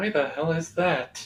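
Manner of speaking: muttering under breath. Voicing a character looking at a distant citadel: muttering under his breath. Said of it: "mutters under his breath".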